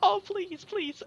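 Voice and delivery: weepy, sobbing, crying, begging pleading voice. A storyteller voices a bandit begging the players: bandit crying and pleading. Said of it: "The bandit's just like like just crying".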